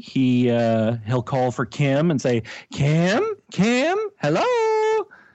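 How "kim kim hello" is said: put-on squawky parrot voice, much higher-pitched. Asked to imitate the parrot calling for Kim, imitating the parrot. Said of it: "could you imitate the parrot?".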